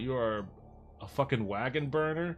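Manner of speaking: plain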